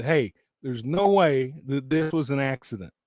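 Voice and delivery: ordinary talk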